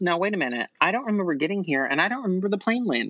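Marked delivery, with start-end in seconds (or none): none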